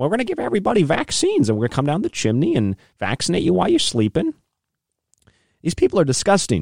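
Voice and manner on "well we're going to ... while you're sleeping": very high put-on voice, pitch swooping around. Joking that Bill Gates will deliver vaccines down chimneys: imitating Bill Gates. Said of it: "Bill Gates is going to run Santa's route".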